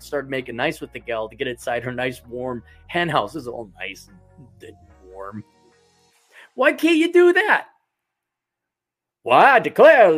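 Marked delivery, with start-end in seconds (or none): 9.2-10.1 very loud, booming, pitched-up cartoon rooster voice. Retelling a cartoon episode about a rooster and a hen, Foghorn Leghorn accent. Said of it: "the Foghorn Leghorn accent".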